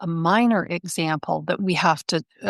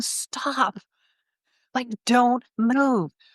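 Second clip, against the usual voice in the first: mock, very drawn-out, high-pitched call, every word stretched; 5 semitones higher than usual. Telling a story about traffic after an ambulance passes, the speaker retells a yell. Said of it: "and I'm yelling".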